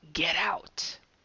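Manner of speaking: low, creepy, icky demon-like whisper. Retelling what a man whispered in her ear, in an icky demonic whisper. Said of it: "that's an icky, demonic voice".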